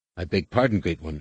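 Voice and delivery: plain reading voice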